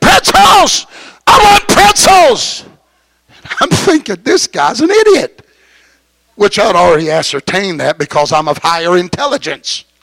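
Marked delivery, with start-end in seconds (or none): 0.0-2.6 very high, swooping, demanding drawn-out scream. Retelling a man by the emergency door, imitating a man screaming. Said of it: "and he's screaming".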